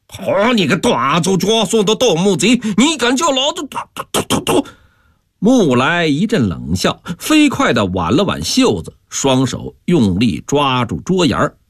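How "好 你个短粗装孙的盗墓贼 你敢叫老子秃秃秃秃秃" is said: enraged, livid outburst, high and rising pitch. Called baldy by a man begging a loan, the uncle retorts, furious. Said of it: "气黄了脸".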